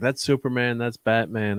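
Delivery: normal talking voice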